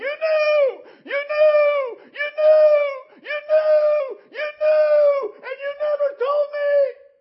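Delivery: very high, very loud, shrill drawn-out scream. Retelling a dream where a father-in-law pointed and started screaming: imitating someone screaming. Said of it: "he started screaming".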